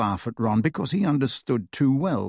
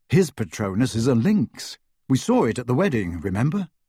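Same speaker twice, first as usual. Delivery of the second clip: ordinary delivery, nothing marked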